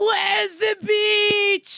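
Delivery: acted very high scream, "beach" drawn out. Imagining chasing someone down the boardwalk as they roll away: pretend screaming. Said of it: "I'm behind you screaming".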